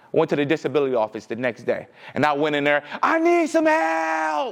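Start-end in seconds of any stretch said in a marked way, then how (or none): 3.0-4.5 screaming, higher pitch. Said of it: "I'm literally screaming".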